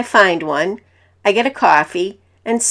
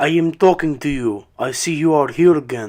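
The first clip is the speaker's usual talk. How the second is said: put-on very thick Russian accent, lower; 6 semitones lower than usual. Retelling what a stranger in a coffee shop said: very thick russian accent. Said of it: "in a very thick Russian accent".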